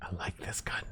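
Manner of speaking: whispering. Trying out a gun while playing a game, whispering. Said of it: "I don't know why I'm whispering".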